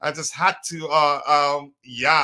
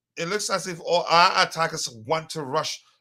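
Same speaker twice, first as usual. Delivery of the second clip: usual speaking voice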